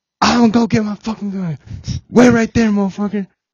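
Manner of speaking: angry high-pitched yell. Retelling a man threatening to get his gun, retelling angry yelling. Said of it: "And then he started yelling".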